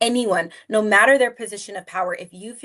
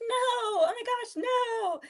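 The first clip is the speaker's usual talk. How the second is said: put-on giggly laughing voice, very high, slow, drawn-out; 14 semitones higher, 8 dB quieter than usual. Role-playing saying no with kids, the speaker acts out Johnny's answer: imitating a kid laughing. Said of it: "And Johnny will laugh again".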